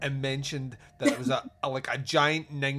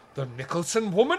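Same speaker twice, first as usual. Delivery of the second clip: deliberately poor, put-on Irish accent; 4 semitones higher, 4 dB louder than usual. Retelling a detective scene, voicing the other detective in a bad irish accent. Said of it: "I'm going to do bad Irish accents".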